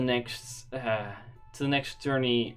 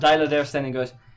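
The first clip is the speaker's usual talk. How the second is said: usual speaking voice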